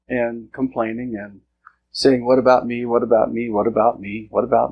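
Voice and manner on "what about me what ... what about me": ordinary talk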